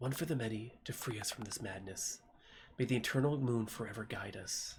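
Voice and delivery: whispered voice. Narrating a scene, a voice is heard among the sound of the sand, whisper. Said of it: "You hear a whisper".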